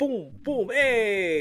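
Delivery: put-on Jamaican accent in a very high pitch. Describing a skit, the speaker imitates Kofi's Jamaican accent. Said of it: "reverts back to Jamaican accent".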